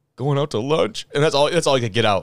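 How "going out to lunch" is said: acted, high-pitched, fighting back tears. Retelling a tournament interview answer: imitating someone holding back tears. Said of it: "holding back tears".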